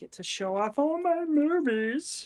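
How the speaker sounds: very high, goofy, silly put-on character voice. Talking to listeners while the other host is away; put-on voice. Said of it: "I don't know why I just did that voice".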